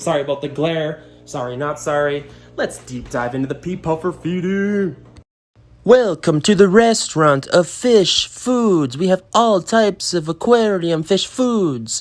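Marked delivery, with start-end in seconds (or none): 5.8-12.0 fake Italian accent throughout, pitched up. Introducing pea puffer feeding like a fish-food restaurant, in a put-on Italian accent. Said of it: "That's my Italian accent".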